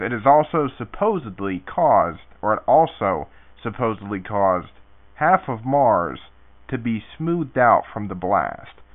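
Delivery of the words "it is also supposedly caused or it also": ordinary delivery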